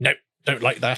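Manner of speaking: put-on harsh delivery. Telling the listener how they reacted when shown the work, imitating a harsh reply. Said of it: "I don't think I sounded quite that harsh".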